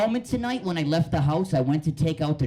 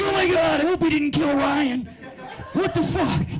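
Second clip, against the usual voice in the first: very high-pitched, alarmed, panicked blurt; 12 semitones higher, 3 dB louder than usual. Retelling hearing a strange voice at home: imitating own past panic. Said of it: "And I'm like".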